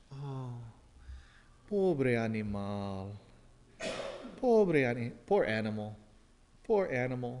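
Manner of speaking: very quiet, slow murmur in Spanish. Retelling what a man says over a deer he killed: speaking very quietly in Spanish. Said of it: "starts saying very quietly in Spanish".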